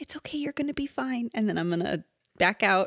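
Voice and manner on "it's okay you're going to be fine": soft, hushed whisper, breath only. Playing a character comforting a small sapling: whisper. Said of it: "I'm gonna just whisper to this little sapling".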